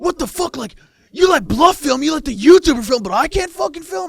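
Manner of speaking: very high, shrill, very loud, outraged, furious shrieking. Retelling a player raging at the pit boss after being told not to film: imitating an angry outburst. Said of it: "it just starts flipping out".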